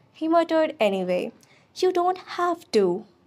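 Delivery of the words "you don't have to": curt, cutting, sharp, high snap. First-person narrator answers a classmate's disapproval, snapping. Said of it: "I snapped".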